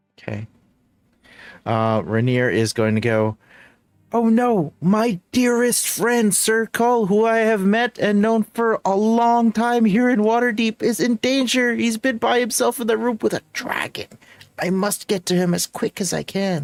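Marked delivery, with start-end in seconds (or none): 4.1-16.7 very high nerdy voice. Voicing the character Rainier in a group scene, Rainier's nerdy voice. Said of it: "Why does he sound like the embodiment of the nerd emoji".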